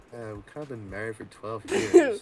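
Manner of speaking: put-on deflated, sorry-sounding, sad swooping tone. Imitating the other speaker's line about being married, imitating someone sounding sad. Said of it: "and then it was just like".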